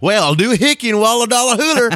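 very high, over-the-top, hokey cowboy voice. Mocking how TV movies portray cowboys, speaker imitates a mock movie cowboy voice. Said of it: "portraying somebody as a cowboy ... they're going".

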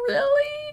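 very high, squeaky, tearful, shaky, crying disbelief. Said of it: "like, crying and my voice was shaking".

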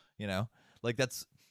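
ordinary talk

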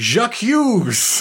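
stormy, high-pitched, storming shout. Recapping a scene where a character storms in on a couple, retelling a shout. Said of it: "She storms in and shouts".

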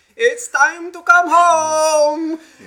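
very loud, high, shrill, booming, slow, drawn-out calling. Retelling how the mother called across the neighborhood: imitating a mother calling out. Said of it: "You would just hear her voice throughout the entire neighborhood".

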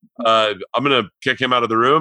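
normal talking voice

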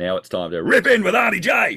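very loud, high, swooping big yell. Redoing the show intro after being told he can still yell, yelling. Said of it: "You can still yell".

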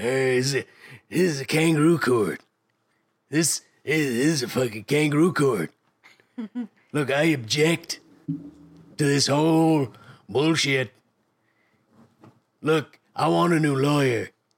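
villain character voice drifting toward a mob-boss voice. Performing a line in character in a mock court scene: Beastman voice. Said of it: "starting to sound less like Beastman and more like a shitty combo of Vito Corleone".

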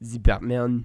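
slow, put-on French accent. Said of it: "say names with a French accent".

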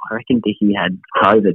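hushed, secretive, conspiratorial whisper. Retelling a remark someone whispered during an ad break: imitating a whisper. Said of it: "whispered to me".

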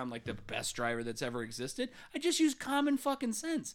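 plain

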